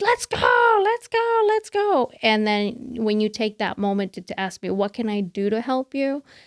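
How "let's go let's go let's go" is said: play-acted frazzled yelling, very high, drawn out. Speaker tells someone about rushing to get Cameron ready, retelling a stressed yell. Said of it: "I'm stressed out and I'm yelling".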